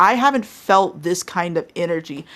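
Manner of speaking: plain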